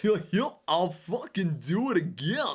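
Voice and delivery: high, bouncing cartoon-like delivery. Quoting a parody video, the speaker does the line in a Goofy voice. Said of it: "Goofy voice".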